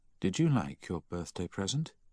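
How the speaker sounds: plain reading voice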